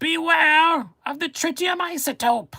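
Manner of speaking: very high, loud cartoon villain voice. Asked for the voice, doing it with a visual aid: Cobra Commander voice. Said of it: "I can even do better than the Cobra Commander voice".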